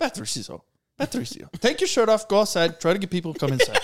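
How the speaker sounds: lively, high, animated, hurried-sounding delivery. Retelling what a bartender says during slow shifts: imitating a bartender. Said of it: "That's such a good impersonation".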